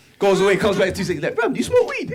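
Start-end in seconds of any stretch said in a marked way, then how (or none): 1.4-2.2 put-on very high toddler voice with street slang. Retelling a little boy's reply in class: imitating a three-year-old's road talk. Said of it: "the way he speaks at three years old".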